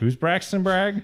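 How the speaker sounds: very baffled, high, slow, totally lost tone. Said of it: "audience would be like".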